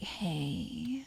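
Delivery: "hey" dragged out in a put-on seductive voice. Describing a man who talks in a sexy voice all the time: mock-sexy drawn-out hey. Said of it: "he's doing it in a sexy voice the whole time".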